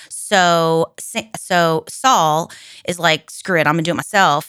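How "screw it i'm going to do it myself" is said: ordinary talk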